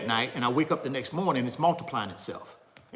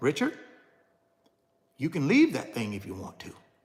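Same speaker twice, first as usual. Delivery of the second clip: rushed, quick, secretive half-whisper. Retelling what net worth half-whispered to richard, half-whispering. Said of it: "Net worth whispered it".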